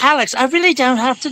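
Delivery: put-on high-pitched British accent. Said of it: "she's like".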